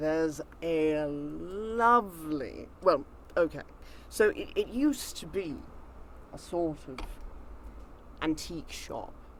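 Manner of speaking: quiet, slow mutter, almost annoyed. Asked for a private place to talk, he answers; quiet mutter to himself. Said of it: "And [name] mutters something to himself kind of quietly that isn't quite annoyed".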